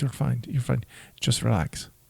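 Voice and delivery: put-on German accent. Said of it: "you are an accent".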